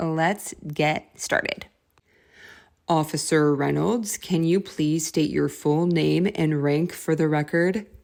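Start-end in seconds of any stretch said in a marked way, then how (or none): 2.9-7.8 deep, low courtroom attorney voice. Reading an attorney's questions in a dictation: low voice for the attorney. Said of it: "I will speak in a low voice for the attorney".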